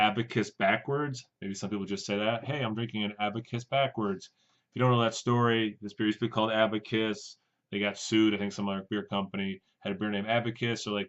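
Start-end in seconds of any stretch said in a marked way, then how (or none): none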